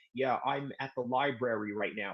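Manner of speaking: put-on deadpan, low, flat monotone. Joking about being less excited, putting on a monotone voice. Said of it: "talk in a monotone way and act like".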